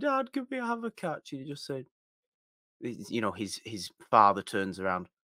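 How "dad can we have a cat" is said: put-on tearful pleading, higher and quieter. Retelling a film's ending scene, imitating Kevin Costner tearfully. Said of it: "he says it with a tear in his eye".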